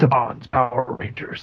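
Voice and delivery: nineties movie-trailer voiceover announcer voice. Imagining a trailer for the movie title: nineties movie trailer announcer voice. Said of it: "he's like".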